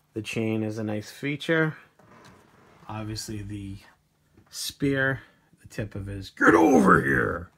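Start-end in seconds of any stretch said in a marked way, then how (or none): 6.3-7.4 very loud, rough, bad barking growl. Describing the spear on a sculpt; bad Scorpion impression. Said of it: "That's a horrible Scorpion impression".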